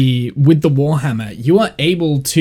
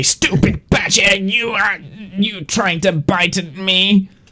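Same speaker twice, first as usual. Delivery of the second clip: sneering, nasty, vicious mocking taunt, pitched up; 6 semitones higher than usual. Voicing a character who taunts a badger: vicious mocking taunt. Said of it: "he's gonna go back to his vicious mockery".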